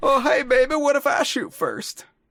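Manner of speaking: goofy, very high, silly put-on voice. Trying out an impression line after talking about impressions: silly put-on impression voice. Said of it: "this is why I don't do silly voices".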